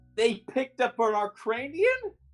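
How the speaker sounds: horrified, appalled tone. Voicing a character hearing the party picked up an Arcranian: horrified. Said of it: "she seems horrified by that".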